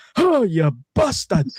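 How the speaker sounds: put-on loud, high, shouted, very thick Scottish accent. Retelling a stranger's shout when a cannon went off at the Christmas market, very thick Scottish accent. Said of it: "this very thick Scottish ac- accent going".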